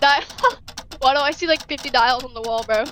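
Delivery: ordinary talk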